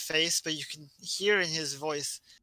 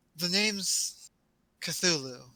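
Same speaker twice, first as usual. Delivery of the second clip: suddenly proper, correct-sounding voice; 2 semitones higher than usual. Voicing a tentacled creature that suddenly speaks: more proper voice. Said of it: "in a more proper voice all of a sudden".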